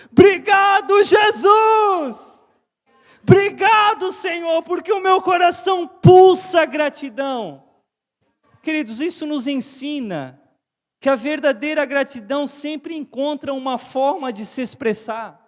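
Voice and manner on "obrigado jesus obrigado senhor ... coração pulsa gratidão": booming, very loud grateful shout. Acting out the healed man returning to give thanks: imitating an even louder grateful shout. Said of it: "voltou gritando ainda mais alto".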